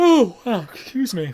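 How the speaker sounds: mid-yawn. Checking whether anybody is hurt, the speaker breaks off, yawning. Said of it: "Excuse me for that yawning".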